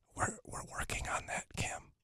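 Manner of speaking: very quiet, hushed, secretive, barely voiced whisper. Leaning in to tell the caller a secret others shouldn't hear: whispering. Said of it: "you really don't have to whisper".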